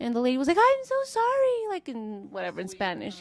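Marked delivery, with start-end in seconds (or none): 0.6-1.7 put-on bewildered, very high-pitched, confused voice. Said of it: "All confused, like, disoriented".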